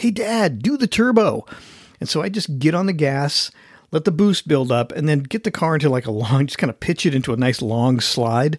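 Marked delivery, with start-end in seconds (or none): 0.0-1.5 put-on high, drawn-out yelling in kids' voices. Retelling what the boys in the back seat yelled: imitating boys yelling. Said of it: "my boys in the back seat would be yelling".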